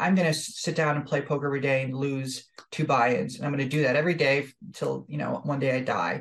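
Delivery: ordinary delivery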